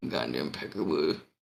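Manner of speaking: muttered quietly under the breath. Showing how to say a phrase underneath your breath, muttered under the breath. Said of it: "say it underneath your breath".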